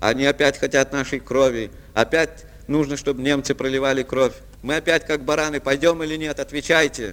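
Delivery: plain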